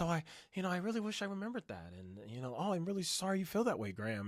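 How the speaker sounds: smooth, mellow, slick smooth-talking tone. Mocking a podcast guest's slick talking: mocking Kevin's mellow slick tone. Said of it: "the mellow tone of voice".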